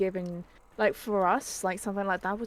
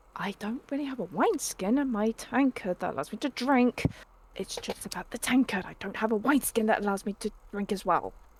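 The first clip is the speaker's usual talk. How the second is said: hushed, huddled, secretive, confiding tone. In a tabletop game, a player's character hushes the gathered group and speaks: hushed tone. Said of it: "Arwen's gonna be in a hushed tone".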